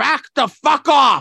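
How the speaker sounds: mock angry yell, very high, loud and dragged out. Retelling how a man yelled after someone pushed his wife: imitating a man yelling. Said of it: "He goes".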